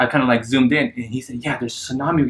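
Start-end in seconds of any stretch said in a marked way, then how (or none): 1.4-2.3 soft, hushed stage whisper. Retelling a stranger in a cinema warning friends: imitating someone half-whispering. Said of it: "he was whispering".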